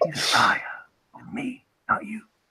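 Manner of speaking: hushed, breathy, secretive whisper. Retelling what the man from the newsroom whispered: retelling a whisper. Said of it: "he as he whispers like".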